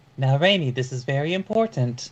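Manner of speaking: put-on woman's voice. A narrator voices a character who speaks in a woman's voice. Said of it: "says in a woman's voice".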